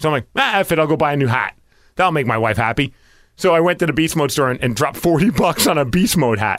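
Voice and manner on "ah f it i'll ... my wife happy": plain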